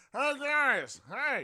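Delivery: very loud, very high, mouth crammed full. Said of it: "walk out the door going".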